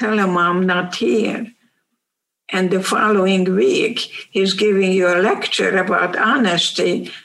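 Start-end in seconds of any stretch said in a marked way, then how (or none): none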